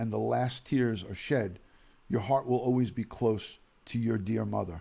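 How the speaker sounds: ordinary talk, nothing marked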